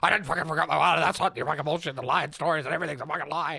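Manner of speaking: mock angry yelling. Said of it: "he'd be yelling right now if he was here".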